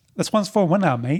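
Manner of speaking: clumsy Australian accent attempt. Urged by the other speaker to try one, doing an attempted australian accent. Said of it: "drop an Australian accent".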